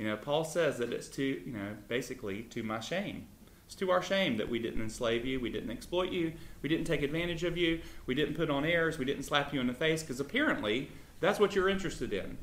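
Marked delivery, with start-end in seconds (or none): none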